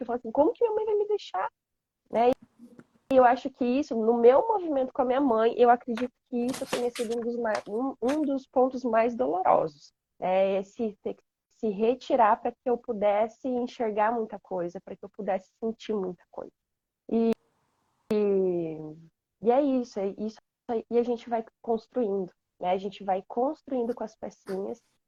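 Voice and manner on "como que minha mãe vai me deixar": put-on high-pitched, angry, hurt child's voice, like a cry. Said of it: "eu ficava com raiva".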